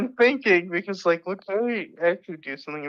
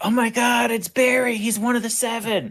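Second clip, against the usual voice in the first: put-on shouting, higher; 4 semitones higher than usual. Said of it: "you yell out".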